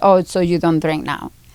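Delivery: plain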